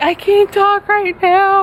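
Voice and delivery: acted-out high, tearful voice, sobbing through words. Retelling answering Josh's call while searching for the lost bird, retelling crying, bawling. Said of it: "as I'm crying, bawling my eyes out".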